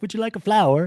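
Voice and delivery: very high-pitched put-on British accent. Recalling a girl who came in bringing a flower, imitating her British accent. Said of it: "she used an, you know, British accent".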